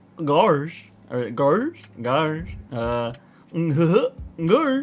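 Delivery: very slow, drawled-out, dopey cartoon dog voice. The speaker tries the Goofy voice they used to do as a kid. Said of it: "I used to be able to do Goofy".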